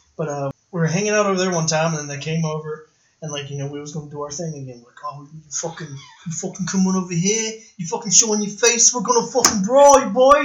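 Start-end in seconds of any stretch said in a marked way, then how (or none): 5.4-10.5 cocky put-on British hoodlum accent, pitched up. Retelling how his group taunted others who came over, in a British hoodlum accent. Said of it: "a couple of kids doing the British accents".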